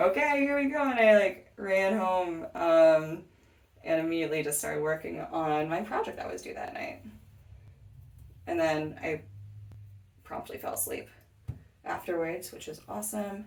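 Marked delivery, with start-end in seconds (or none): 0.0-0.8 mock hyped-up, eager, pumped, pitched-up voice. Retelling pumping a fist in the air: imitating own pumped reaction. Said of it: "I was so pumped".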